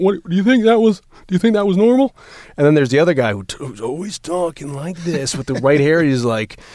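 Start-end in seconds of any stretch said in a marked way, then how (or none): 0.0-2.1 mock slightly drunk man voice, much higher. Speaker listing annoying people, imitating one guy, mimicking a slightly drunk guy. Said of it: "He kind of talks like this, and he always seems a little drunk".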